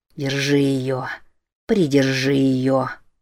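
hushed whisper. A man urges a stone boy gripping his wife's wrist, whispered. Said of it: "прошептал Норман".

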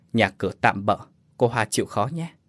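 ordinary delivery

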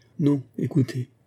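quivering, trembling, still-shaken voice. A woman begins her reply, her voice still trembling. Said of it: "dit-elle d'une voix encore tremblante".

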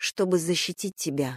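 usual speaking voice

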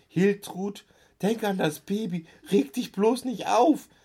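piercing, shrill, high-pitched shriek. Reading a story, an aunt calls to a relative amid banging on a door: shrieking. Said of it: "Und Tante Marianne kreischte".

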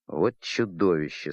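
embarrassed, awkward grumbling mutter. Captain Bannerman, speaking to Olein about the prisoner: embarrassed mutter. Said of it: "смущенно буркнул капитан".

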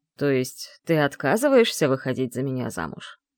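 smooth, coaxing, low, insinuating voice. A man stands, squints at the narrator and asks, insinuatingly. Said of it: "так вкрадчиво спросил".

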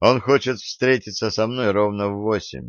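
ordinary delivery

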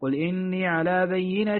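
ordinary talk

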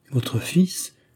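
shocked, shaking, trembling, quavering voice. Replying to the father's question about his son, trembling voice. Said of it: "dit Adeline d'une voix tremblante".

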